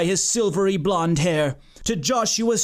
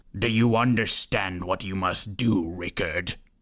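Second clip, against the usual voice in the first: very low, oddly soothing scolding voice; 12 semitones lower, 4 dB quieter than usual. Narrating a story, voicing an unseen speaker scolding someone nearby: low, soothing, chastising voice. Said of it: "low, oddly soothing voice chastising".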